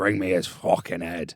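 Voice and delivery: put-on, fake Irish brogue. Recounting a plot, voicing the main character's dad in a put-on Irish accent. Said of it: "sorry for the accents".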